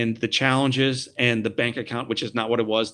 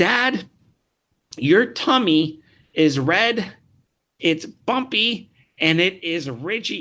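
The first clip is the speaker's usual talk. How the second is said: put-on sweet, innocent little boy voice, high, very slow; 7 semitones higher, 3 dB louder than usual. Retelling his little boy tracing his scar and speaking to him: sweet innocent little boy voice. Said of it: "with a sweet little innocent little boy voice".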